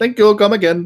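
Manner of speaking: put-on Indian accent. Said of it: "Can you do a poo from The Simpsons?".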